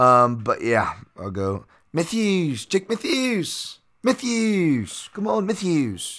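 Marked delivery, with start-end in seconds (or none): 1.9-6.2 terrible fake Australian accent, very high-pitched. Picking Jake Matthews and cheering him on, terrible Australian accent. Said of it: "a terrible Australian one".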